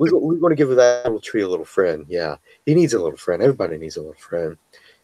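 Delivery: calm, relaxing TV painting-host voice. Joking about a mellow show, painting a tree: Bob Ross voice. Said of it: "we're all starting to sound like Bob Ross".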